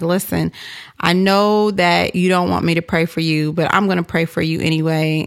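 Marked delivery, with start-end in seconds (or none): none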